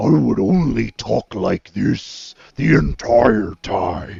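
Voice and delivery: loud, booming, slow, creaky voice. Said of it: "if Themberchaud were the one talking".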